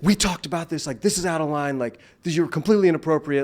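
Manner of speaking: put-on scolding tone. Retelling how the CEO pulled them aside mid-set: imitating someone scolding. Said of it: "scolds me".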